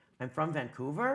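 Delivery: rising uptalk on the word Vancouver. Describing people who uptalk statements, uptalk on Vancouver. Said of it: "are you asking me that? Or is it because you're up talking?".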